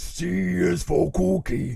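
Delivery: weird, rough, raspy, loud voice, very slow, drawn out. Recalling childhood cartoon voices, quoting Cookie Monster in a Cookie Monster voice. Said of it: "he had a weird voice".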